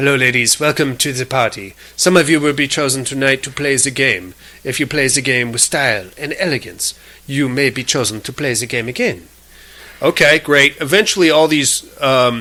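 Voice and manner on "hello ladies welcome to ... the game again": put-on soft, vague European accent, possibly Italian. Retelling how the woman greeted the ladies, in Catherine's weird European accent. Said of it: "She has a weird European accent, maybe Italian".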